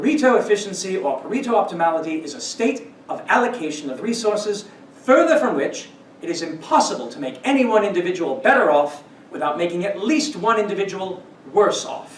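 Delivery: horrendous, put-on British accent.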